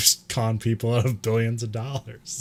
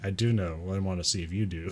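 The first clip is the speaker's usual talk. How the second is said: put-on deadpan delivery, lower and quieter; 4 semitones lower, 8 dB quieter than usual. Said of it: "Cho's just deadpanning".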